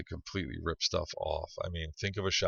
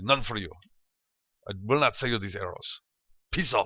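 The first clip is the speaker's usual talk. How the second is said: loud, rude, put-on Russian accent; 4 semitones higher than usual. Acting out a curt shopkeeper refusing to sell to haggling customers, using a put-on accent drifting toward Russian. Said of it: "You're doing this funky accent from Seinfeld".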